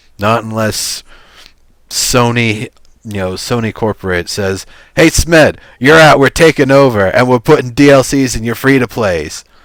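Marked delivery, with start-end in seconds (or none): 5.0-9.5 put-on loud, tough, hard-driving New York accent. Speaker imagines Sony corporate telling Smed he's out, in a tough New York business accent. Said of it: "a tough New York business accent".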